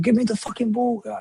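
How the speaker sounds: acted, half-shouted, demanding tone. Retelling how a player who came on shouted at teammates: imitating Isak shouting. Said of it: "he started shouting at people".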